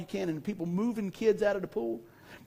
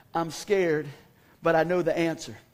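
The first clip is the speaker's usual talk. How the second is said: normal talking voice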